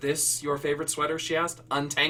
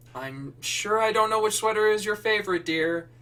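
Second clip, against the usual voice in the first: weary, condescending, patronizing tone, pitched up; 5 semitones higher than usual. A mother calls back up the stairs to her daughter Becca, tired, patronizing voice. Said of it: "The tired and patronizing voice".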